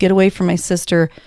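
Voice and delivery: normal talking voice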